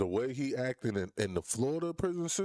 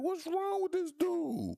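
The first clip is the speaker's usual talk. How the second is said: mock high voice, laughing through the words. Imitating a co-defendant watching the witness: imitating a laughing co-defendant.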